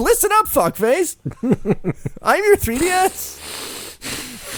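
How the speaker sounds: crude, rude, high, very slow gadget voice. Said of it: "I'd like to do my three D S's voice".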